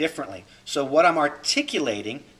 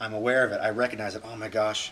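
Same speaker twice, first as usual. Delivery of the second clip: normal talking voice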